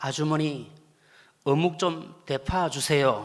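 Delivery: put-on soft, gentle voice in Gyeongsang accent. Retelling a friend asking a Seoul vendor for more fishcake, quoted in a soft voice. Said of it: "아주 나름대로 부드러운 목소리로".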